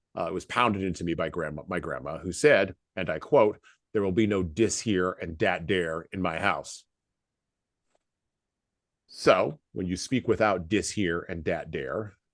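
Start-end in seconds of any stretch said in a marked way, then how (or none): none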